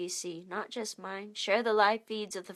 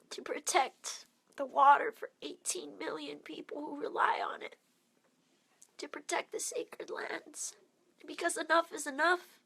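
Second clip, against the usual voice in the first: tearful voice, higher and quieter; 7 semitones higher, 4 dB quieter than usual. Describing the buffalo arriving and the opposition faced: crying while speaking. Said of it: "And I'm crying now because it hurts".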